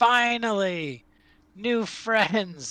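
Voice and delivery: put-on loud, high, eager kid voice bursting with excitement. Voicing a boy of about nine who bounds out grinning at newcomers, loud enthusiastic boy. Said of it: "He's very loud".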